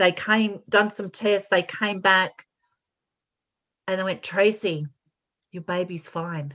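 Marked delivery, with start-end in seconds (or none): 4.2-6.5 put-on whisper, lower and quieter. Retelling doctors' news after tests: imitating someone whispering. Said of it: "they whispered it like it wasn't meant".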